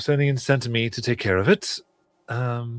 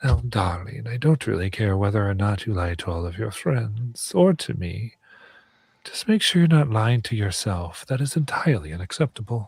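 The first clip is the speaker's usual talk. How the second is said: whispering in character. Voicing a character at a player's ear: whispering in character. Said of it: "and I whisper".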